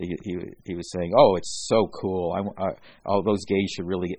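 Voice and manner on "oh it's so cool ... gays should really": imitated sarcastic delivery. Retelling what an overheard eleven-year-old said: imitating a kid's sarcasm. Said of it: "but he was being sarcastic".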